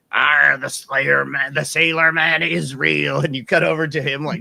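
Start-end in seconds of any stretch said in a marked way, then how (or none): 0.1-3.2 put-on creepy drunk voice, louder. Retelling a movie scene with a drunk guy at the bar: imitating a creepy drunk guy. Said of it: "you hear this one drunk guy at the bar going".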